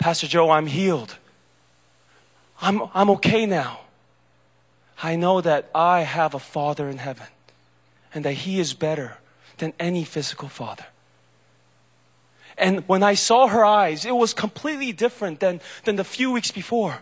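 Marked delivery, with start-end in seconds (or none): 0.0-10.8 gentle, glowing, joyous voice. Retelling what a woman said to the pastor during retreat prayer: retelling a soft, joyous voice. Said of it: "in the most soft but joyous voice possible".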